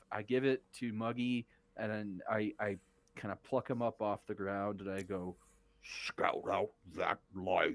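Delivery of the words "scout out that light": croaky frog-like speaking voice. Picking up the frog Muggy and sending him to scout, in frog speak. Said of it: "I'm not as well versed in frog speak".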